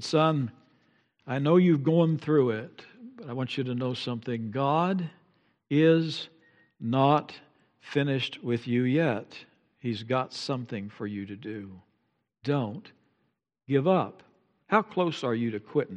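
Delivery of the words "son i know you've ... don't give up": put-on gentle whisper, quieter. Retelling what a father said during a dark time: imitating a gentle whisper. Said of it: "he whispered to me gently".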